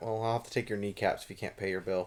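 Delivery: low, menacing, threatening voice. Threatening a player who can't pay for a crossbow: menacing loan shark voice. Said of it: "You sound like a loan shark".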